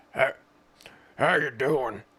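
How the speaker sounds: loud put-on old lumberjack voice. Voicing an imagined talking truck: old lumberjack voice. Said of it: "it would sound like an old lumberjack".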